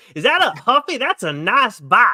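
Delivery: put-on heavy, slow, high-pitched Southern accent. Quoting a remembered movie line: Reese Bobby voice, Southern accent. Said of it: "you got a pretty good Southern accent there".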